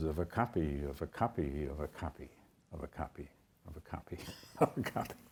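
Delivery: very quiet, slow delivery through a chuckle. Speaker describing research findings to listeners: chuckling while speaking.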